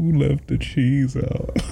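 very high voice with laughter breaking through the words. Repeating a line that the speaker finds funny: laughing while talking. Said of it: "I need to chill".

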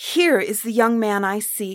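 joyful, loud, drawn-out glad cry. Narrating, the princess recognizes the young man she seeks; glad cry. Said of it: "Gladly the princess cried".

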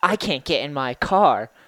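put-on little kid voice. Retelling what she said to the speaker, imitating a little kid's voice. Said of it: "like a little kid".

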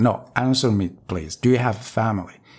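acted near-tearful, teary pleading voice. Retelling asking an officer to reconsider: retelling a near-tearful plea. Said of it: "I had almost tears in my eyes".

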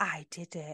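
quiet, soft, hushed little half-whisper. A parent imitating their toddler daughter, who keeps half-whispering: imitating a toddler's half-whisper. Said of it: "she keeps whispering".

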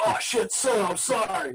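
put-on heavy Brooklyn accent. Retell the sergeant apologizing after his bayonet stuck your leg, in Rafael Sosa's heavy Brooklyn or Bronx accent. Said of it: "this heavy Brooklyn or Bronx accent".

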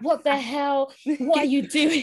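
high-pitched screaming, shouting outburst. Retelling the speaker's mum reacting to a niece's Facebook post, imitating mum screaming. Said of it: "like screaming".

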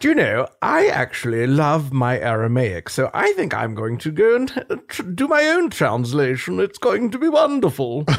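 slow, sing-song, drawn out with big pitch swoops. Pretending to be the king who made a Bible version: King James impression. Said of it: "That's my King James impression".

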